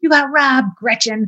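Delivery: high, put-on rowdy bar yell. Retelling a bar story, imitating a person yelling to a bartender. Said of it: "one person's yelling like".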